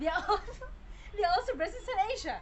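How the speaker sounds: high, giggly, laughing through the words.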